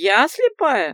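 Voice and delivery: very loud, outraged, indignant wailing cry. Narrator voicing someone behind a door retorting to an old woman, indignant wail. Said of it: "возмущенно возопил голос за дверью".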